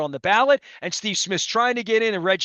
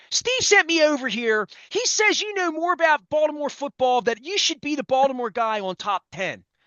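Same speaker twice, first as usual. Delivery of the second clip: put-on Philadelphia accent, pitched up; 5 semitones higher than usual. Retelling what an assistant told him at his table: imitating a philly accent. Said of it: "she had a Philly accent".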